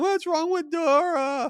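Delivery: play-acted crying child, very high, "Dora" drawn out. Retelling children seeing a headless dora, imitating crying children. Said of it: "and crying".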